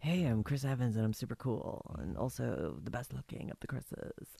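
seductive, sultry, breathy whisper. Acting out how he said his introduction, in a mock-sultry voice. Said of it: "He said it in like a sultry".

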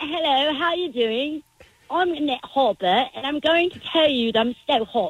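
put-on British accent drifting into Australian. Asked on a call to show her british accent, doing an attempted british accent. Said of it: "Can I hear your British accent".

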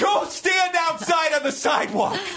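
very high-pitched, lost-it scolding. Recounting losing it after the son knocked over a glass: retelling yelling at son. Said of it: "as I'm yelling at my son".

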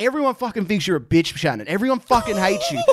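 acted, heated outburst, rising and swooping. Retelling telling off the boss in front of customers: retelling own yelling at boss. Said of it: "I'm going off. Everyone can hear me".

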